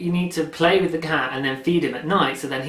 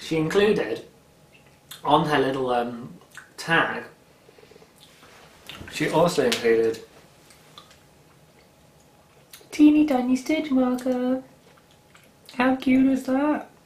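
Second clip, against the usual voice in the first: talking with mouth full while eating. Describing a gift bag's contents to viewers, talking with mouth full. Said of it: "I'm just gonna talk my mouth full".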